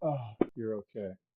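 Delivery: put-on low, soft, distressed, dismayed voice. Teasing the DM after a player survives, imitating the DM's distressed voice. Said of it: "did you hear the distress in the D M's voice".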